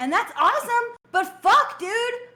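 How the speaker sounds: temper tantrum. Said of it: "Are you finished throwing a temper tantrum now?".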